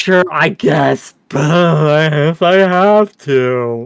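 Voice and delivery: very slow, unenthusiastic, grudging, very drawn-out delivery. Mocking a caller's reluctant answer: imitating an unenthusiastic reply. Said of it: "Don't sound so excited".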